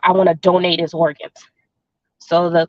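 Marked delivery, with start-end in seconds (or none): none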